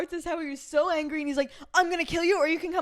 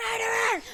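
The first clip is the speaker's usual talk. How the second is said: mock screaming, higher pitch; 6 semitones higher than usual. Retelling a character's outburst in a book: imitating someone screaming. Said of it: "screaming, like".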